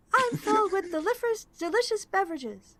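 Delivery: very high, cheery, chipper robotic salesman voice. A talking barrel robot tells a customer what it is filled with. Cheerful salesy voice. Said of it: "It seems to be a keg robot, / Is a wooden and metal construct, vaguely reminiscent of a dwarf wearing a horned helm, and it has a barrel for a body. It seems to be a keg robot, very stout wood metal c".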